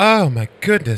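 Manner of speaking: high, swooning exclamation like a Southern belle. Teasing a friend about a neighbor who carried a heavy air conditioner, mock swooning. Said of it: "Did you swoon?".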